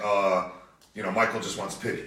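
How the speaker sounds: ordinary delivery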